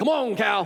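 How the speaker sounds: attempted put-on cowboy voice. Trying to get a cow to come along, in a put-on cowboy voice. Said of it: "in my best cowboy voice".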